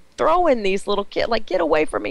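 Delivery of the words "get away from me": acted-out scream, pitched very high. Retelling throwing little kids away, retelling her own screaming. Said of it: "And I'm screaming".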